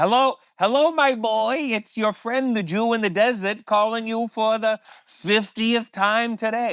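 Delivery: very high put-on voice, dragged out. Retelling a friend's phone greeting in his put-on voice: Jerry Lewis voice. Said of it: "he would do his Jerry Lewis voice".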